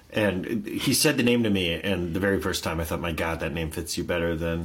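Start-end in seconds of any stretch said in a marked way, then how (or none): none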